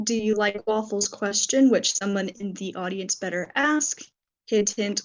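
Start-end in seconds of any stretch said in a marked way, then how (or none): none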